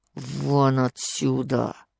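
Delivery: hushed, strangled, choked-off voice. Narrator reads the man's words to the old woman, quiet, strangled voice. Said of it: "сказал тихим, придушенным голосом".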